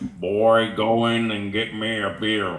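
very slow, deliberate drawl, word by word. Imitating Homer from the early seasons: slow early Homer Simpson voice. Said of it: "It was very slow".

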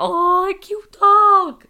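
voice breaking, very high and loud squeal. Retelling greeting a dog: imitating own voice crack. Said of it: "Voice crack".

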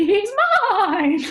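high, loud, spooky, creepy clown voice. Reading a girl's line aloud from a story, like the clown from It. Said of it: "You sound like the clown from It".

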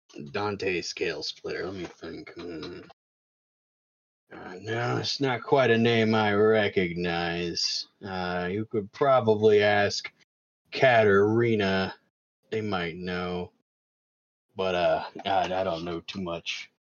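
very deep, very low, gruff orc voice. Voicing an orc asked about someone: gruff orc voice. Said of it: "very gruff, it's a very gruff voiced orc".

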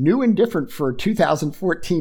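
ordinary talk

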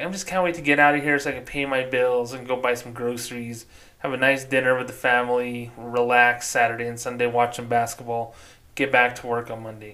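ordinary talk

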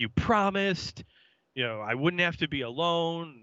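upset outcry, reined in. Recapping a scene where Daryl wrecks Chris's basement, retelling Daryl's yelling. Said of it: "he's yelling and throwing things".

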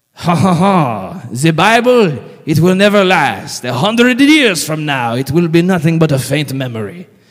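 put-on terrible French accent. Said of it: "Excuse me for my terrible French accent".

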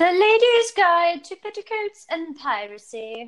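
very high, nasal, slow put-on British accent. Reading out a silly book title someone else didn't, in a put-on British accent. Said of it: "that's how you have to say the name of that".

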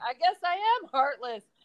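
acted-out yelling, shouted back. Retelling a rodeo run, imitating own scream back at a rider. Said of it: "And I scream back".

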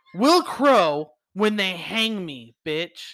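very dramatic theatrical delivery. Retelling the exact quote of a man facing hanging: very dramatic. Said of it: "that I'm gonna say very dramatic-, dramatically".

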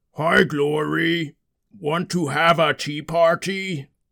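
slow, strange, odd-sounding pretend dragon voice. Playing the dragon Clay at a pretend tea party, in Clay's dragon voice. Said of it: "you're sounding a little weird today".

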